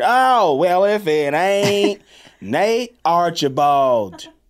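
high, rich, put-on Southern American accent. Playing a rich southern character, speaking in a southern american accent. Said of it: "I'm rich Southern".

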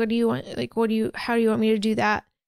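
speaking through mock crying. Retelling a movie scene where a tied-up mother answers: imitating crying while speaking. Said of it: "And she's crying".

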